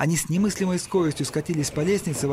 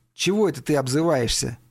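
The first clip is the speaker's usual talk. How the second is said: ordinary delivery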